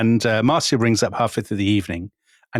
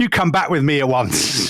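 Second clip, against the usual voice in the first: put-on bossy, domineering mild yell, half-shouted; 4 semitones higher than usual. Retelling how a woman shouted at the Prime Minister in front of staff: imitating someone shouting. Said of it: "she shouts at him".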